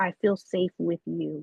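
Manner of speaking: ordinary delivery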